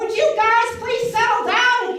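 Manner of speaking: yelling. Showing how a parent yells at the kids, yelling. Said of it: "I'm yelling".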